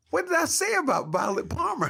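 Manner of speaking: loud, high, baffled, outraged disbelief.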